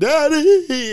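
shrill, very high, loud sobbing wail. Imitating a stranger at a funeral crying out: imitating a woman crying. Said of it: "some bitch at the funeral crying, like".

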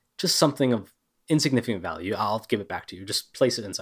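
ordinary talk, nothing marked

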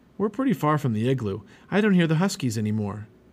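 ordinary delivery

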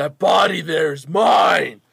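very loud, high shout. Voicing a captain who shouts from a crowd: Captain Riveda shouting. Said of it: "Captain Riveda shouting out".

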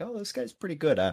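put-on Midwestern accent slipping out. Talking about which teams make a top five, slipping into a Midwestern accent. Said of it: "that was my Midwestern coming out in me".

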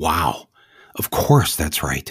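ordinary delivery

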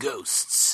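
mock scary trailer narrator. Retelling the old Ghostbusters trailer, imitating an 80s trailer voiceover. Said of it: "every movie sounded like the scariest horror movie ever".

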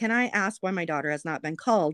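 normal talking voice

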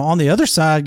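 normal talking voice

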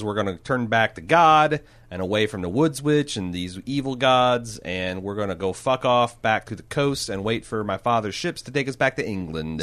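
ordinary delivery

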